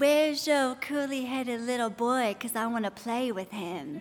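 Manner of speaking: put-on Southern accent, little girl voice. Recalling a little girl at church asking about the speaker's son, little girl's southern accent. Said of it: "she said in her little southern accent".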